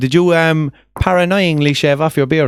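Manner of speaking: normal talking voice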